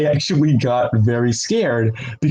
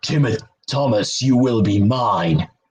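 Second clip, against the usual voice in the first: put-on demon-form character voice; 3 semitones lower than usual. Answering a listener question about two brothers, in demon-form voice. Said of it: "if it was like his demon form".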